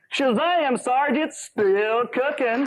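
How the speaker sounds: hammed-up, goofy voice pitched way high. Answering Sarge about the roast in a skit: hammed-up Gomer Pyle voice. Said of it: "he extra hams up his Gomer Pyle".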